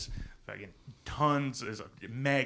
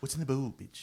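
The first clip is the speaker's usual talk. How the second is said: put-on cartoonish baby talk; 2 semitones higher than usual. Doing the impression in short bursts: Stewie Griffin impression. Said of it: "it's best in short bursts because it talks fast".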